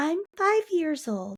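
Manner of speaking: very high, tiny, cutesy put-on little voice. Retelling what a woman said in a video: imitating her little voice. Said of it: "talking in this voice".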